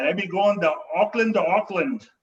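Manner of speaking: put-on Scottish-accented speech. Retelling what a traveller at the airport said: imitating a Scottish accent. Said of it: "so he said it in a Scottish accent".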